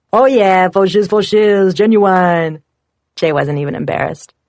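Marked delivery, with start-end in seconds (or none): 0.1-2.6 loud, eager, excited, hyped-up shout. Reading a memoir, a friend mocks his greeting: impression of Jay. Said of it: "[name] did an impression of Jay".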